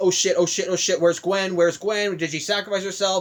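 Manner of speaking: ordinary talk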